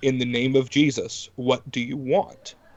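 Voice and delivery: crackly voice, cracking with slight fear. Retelling commanding a spirit to speak: imitating own crackly, fearful voice. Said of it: "in an already crackly voice because of puberty".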